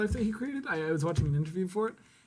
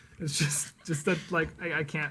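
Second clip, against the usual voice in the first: plain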